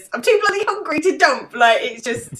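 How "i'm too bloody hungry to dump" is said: shrill, very high, hysterical panicked voice. Quoting a character from a series while discussing a scene, mock-hysterical. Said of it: "I love the hysteria in his voice as well when he says".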